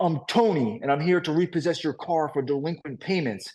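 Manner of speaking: put-on Long Island accent. Retelling what the tow truck driver said at the door: thick Long Island accent. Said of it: "with his thick Long Island accent".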